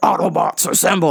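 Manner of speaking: rough, grinding, creaky robot leader voice. Retelling a delayed flight, mimicking Optimus Prime: Optimus Prime voice. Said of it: "I felt like Optimus Prime".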